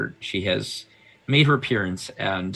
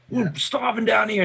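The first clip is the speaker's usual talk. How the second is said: angry riled-up crowd shouting, higher; 14 semitones higher, 3 dB louder than usual. Voicing a hungry crowd demanding help: angry mob demanding help. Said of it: "mob cries of basically kind of demanding".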